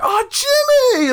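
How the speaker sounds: high, happy, cheerful voice at very high pitch. Speaker imitates family rushing to their table to greet them, mock-happy greeting. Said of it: "Like they're all like happy to see me".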